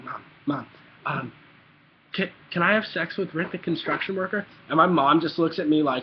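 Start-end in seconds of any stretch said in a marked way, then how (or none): 0.0-4.5 hushed, quiet whisper. Retelling a question whispered to mom as a child: imitating own past whisper. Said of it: "I whisper in her ear".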